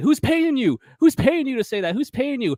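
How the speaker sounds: put-on, very high, furious, demanding shout. Retelling a movie scene where an injured player yells at the doctor, imitating an angry yell. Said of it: "the player gets really mad and he yells at the doctor".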